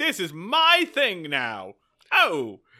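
hammy diva voice, high, loud, slowed.

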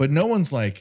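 usual speaking voice

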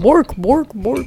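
put-on Swedish-sounding voice. Joining in on the Swedish Chef bit: Swedish Chef voice. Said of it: "I would be Swedish Chef".

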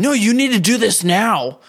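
put-on very high-pitched, shrill yelling. Retelling how Dawson yelled orders at random skaters: imitating someone yelling. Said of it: "yelling at some of the skaters".

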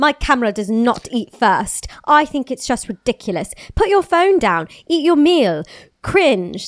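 put-on British accent. Reading a celebrity's quote from a magazine: Millie Bobby Brown accent. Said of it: "That's my Millie Bobby Brown impression".

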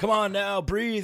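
screaming, high and loud mock yelling.

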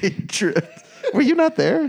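high, loud talking while laughing.

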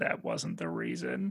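very low mutter under the breath. Retelling what the eldest son said from the passenger seat: imitating muttering under breath. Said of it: "under his breath said".

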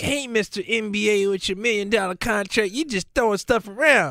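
put-on braggadocious voice. Retelling how another speaker bragged in the cheap out game: imitating a bragging voice. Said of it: "He's like".

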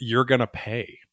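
put-on whispery voice. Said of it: "this whispery voice".

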